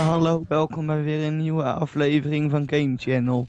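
monotone, flat, uninterested tone. Demonstrating how people sound when they talk in a monotone, monotone and uninterested. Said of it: "zo ongeïnteresseerd".

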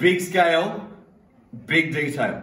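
big booming voice, loud and slow, almost yelling. Explaining the large-scale rule in a lesson: big voice, almost a yell. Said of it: "Big voice. Quite a yell".

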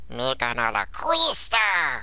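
cartoon character voice, pitch swooping up and down. Talking about voice acting, a line in a Stitch voice. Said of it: "I can do a really mean Stitch".

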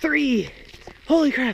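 breathless, winded, very high-pitched gasping voice. Talking while walking, out of breath. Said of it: "I'm really out of breath".

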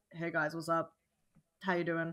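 low, soft, natural unmasked voice. Speaker showing how their voice drops when not masking, low voice. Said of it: "I'm sitting here like".

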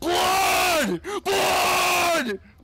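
high, loud, desperate yelling.

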